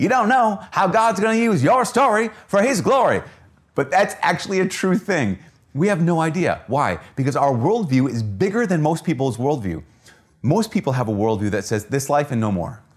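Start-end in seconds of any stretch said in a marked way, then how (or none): 0.0-3.2 loud, high televangelist preaching voice. Speaker repeating a sermon point to show how it sounded, televangelist preacher voice. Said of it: "did I just sound like a televangelist preacher".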